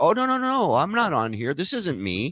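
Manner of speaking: mocking, insincere tone. Imitating someone denying it's him, as a mock denial. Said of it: "Just lies, lies in his fifties".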